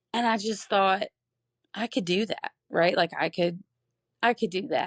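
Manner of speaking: voice catching and breaking mid-phrase, choked-up, halting. A parent of a son with Down syndrome telling her story, choked up. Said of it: "I'm getting choked up already".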